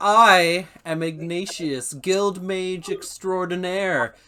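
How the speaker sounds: chest-out bragging, proud and pleased with himself. Game narrator voicing Ignatius introducing himself to the arriving party: proud Ignatius voice. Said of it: "puffs his chest out and he looks very proud of himself".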